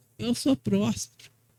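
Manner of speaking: timid, shy, bashful, faint-hearted manner. Preaching, acting out someone deceived who says it shyly: mock-timid, shy. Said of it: "é acanhado".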